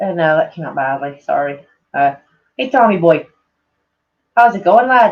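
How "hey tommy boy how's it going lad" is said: Irish-sounding accent with an Irish ring. Streamer greeting a viewer by name, in an Irish-sounding accent. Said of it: "that does sound fucking Irish".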